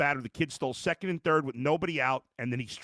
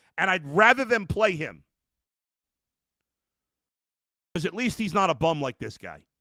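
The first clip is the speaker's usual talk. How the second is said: loud, worked-up, emotional outburst; 3 semitones higher, 5 dB louder than usual. A speaker venting about the Browns' quarterback: emotional. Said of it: "I'm I'm emotional".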